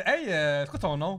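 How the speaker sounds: plain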